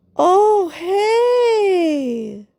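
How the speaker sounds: very high, over-sweet, syrupy, hey drawn out. Describing one person they dealt with, imitating an overly syrupy voice. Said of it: "that syrupy, oh hey, like too much, super syrup".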